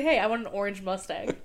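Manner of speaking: normal talking voice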